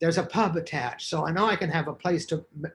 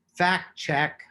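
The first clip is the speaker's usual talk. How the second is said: ordinary talk, nothing marked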